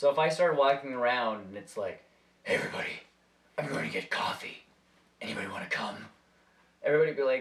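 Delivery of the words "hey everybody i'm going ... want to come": burly, gruff, gravelly, breathy whispered superhero growl. Showing how a burly Batman voice would sound on himself: burly Batman-style voice. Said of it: "that voice would not fit me".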